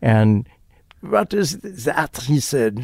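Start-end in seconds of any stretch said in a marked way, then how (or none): 1.0-2.2 very bad, clumsy put-on French accent, higher. Retelling a question asked at a Tex-Mex place: bad Francois Truffaut accent. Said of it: "that wasn't his accent".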